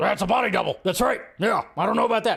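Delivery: rough, creaky host-style voice. Joking about a body double theory, doing an Alex Jones impression. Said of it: "That's my Alex Jones impression".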